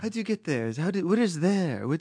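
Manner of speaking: put-on French accent. Retelling what a french woman kept asking: imitating a french accent. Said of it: "she was had a French accent".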